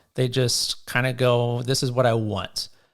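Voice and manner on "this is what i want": ordinary delivery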